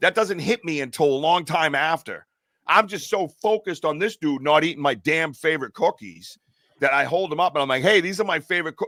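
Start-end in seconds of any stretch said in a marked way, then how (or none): 7.8-8.9 mock, fast, scolding, reprimanding holler. Retelling reprimanding Bigfoot while holding up his cookies, retelling his own yell. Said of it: "I'm yelling out to the woods again".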